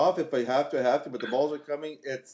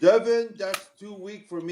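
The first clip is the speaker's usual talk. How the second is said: put-on French accent, pitched up; 6 semitones higher than usual. Retelling what Louis said in a video, imitating a French accent. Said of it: "he said in his French accent".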